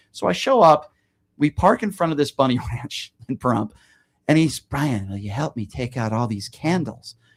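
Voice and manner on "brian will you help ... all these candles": low, quiet creepy man's voice. Retelling what a man said after they parked outside the ranch, imitating a creepy guy. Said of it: "he kind of talks like this. Very creepy guy".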